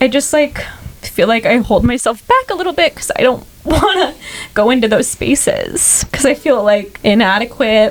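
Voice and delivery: tearful, choked up, voice breaking. A podcast guest speaking to the host, crying, voice breaking. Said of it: "I can't believe I'm crying on the podcast".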